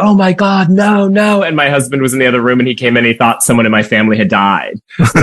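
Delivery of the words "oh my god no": acted, high, very slow, drawn-out, joyful squeal. Retelling getting the phone call that she said yes, retelling an excited scream. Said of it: "I was screaming like".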